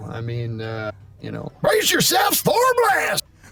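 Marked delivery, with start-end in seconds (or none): 1.6-3.2 put-on very high, cranky, crotchety old hillbilly voice. Answering about the old hillbilly voice, showing it: crotchety old hillbilly voice. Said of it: "sixty-year-old crotchety hillbilly".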